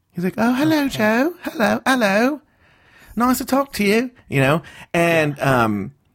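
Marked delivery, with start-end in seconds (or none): 0.4-4.1 very high, effeminate, femmy British voice. Describing a British man she first talked to by voice, imitating a femmy British voice. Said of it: "He has like a very like kind of like femmy voice".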